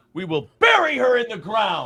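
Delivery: put-on character voice with strongly swooping pitch. Recalling a line burned into memory, Daniel Plainview voice. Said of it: "a good Daniel Plainview impression".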